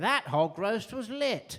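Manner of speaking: slow, grandiose posh drawl. Retelling what a posh person said: imitating a posh person. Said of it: "I heard a posh person recently say".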